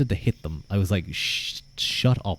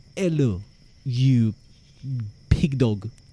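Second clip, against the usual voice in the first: slow, exaggerated, over-the-top put-on French accent; 4 semitones higher than usual. Comparing ways of saying hello, the speaker demonstrates how a French person would sound, French accent. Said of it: "a French person would be".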